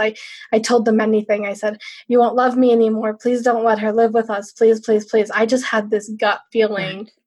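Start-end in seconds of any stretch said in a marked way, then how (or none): 2.1-5.3 put-on pleading, begging tone. Retelling begging parents not to let someone live with them: retelling own past pleading. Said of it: "I begged and I had pleaded".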